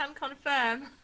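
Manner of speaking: loud, high-pitched shout. Answering another player's character in the game: shouting back in character. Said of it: "I shout back saying".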